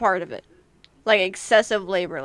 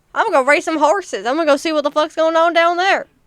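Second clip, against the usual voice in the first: exaggerated Southern twang, much higher; 8 semitones higher, 7 dB louder than usual. Riffing on hearing the twang creep into one's voice, exaggerated southern twang. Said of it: "that Southern twang got a real bit of comedy".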